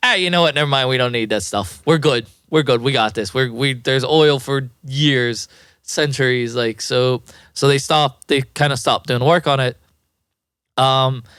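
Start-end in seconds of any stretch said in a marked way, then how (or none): none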